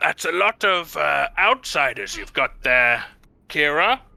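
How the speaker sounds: put-on grumpy old voice. Voicing an older dragonborn who peers down from a gatehouse: crotchety old dragonborn. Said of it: "peers at you all with a crotchety old eye".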